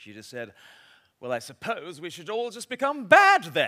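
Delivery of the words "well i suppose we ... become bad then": very loud, carrying, rising pitched-up remark. A woman in church turns to her friend mid-talk, retelling a loud remark. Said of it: "she said in a loud voice".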